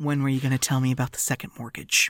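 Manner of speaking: low, soft, quick, calm, menacing tone.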